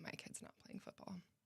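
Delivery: put-on, barely whispered, hushed, flat monotone deadpan. Speaker retells how people answered when asked to think of their kids: imitating a deadpan reply. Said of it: "they look at me deadpan and say".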